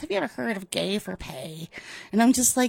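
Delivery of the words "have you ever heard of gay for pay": mock delivery, as creepy as possible. Retelling a TV character's line to an Uber driver: creepy delivery. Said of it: "leans into the Uber driver in the creepiest way".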